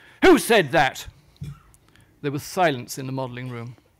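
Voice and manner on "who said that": roaring, full-throated, booming, furious bellow. Reading a story, voicing a character who spins round: bellowing. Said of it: "he spun round on his wooden leg and bellowed".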